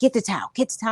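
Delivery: insistent scolding, nagging yell, repeated. The speaker retells a woman who kept yelling at them about towels, imitating someone yelling. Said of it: "She kept yelling at me".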